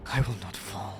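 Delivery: through gritted teeth. Playing the healer who stays on the battlefield, speaking through gritted teeth. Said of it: "like through gritted teeth, he goes".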